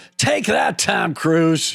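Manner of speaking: high, creaky character voice. Retelling a shout on the basketball court: Chet voice. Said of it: "in my Chet voice".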